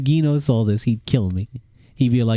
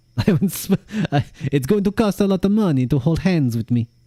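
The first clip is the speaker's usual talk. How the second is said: put-on Russian accent, pitched up; 6 semitones higher than usual. Playfully demanding payment to hold hands, Niko Bellic Russian accent. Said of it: "I went from Spanish to like Russian".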